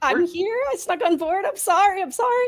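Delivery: trembling, stammering, very high frightened voice. Playing a caught stowaway giving her name, shaking and stammering. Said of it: "I'm still shaking, being like".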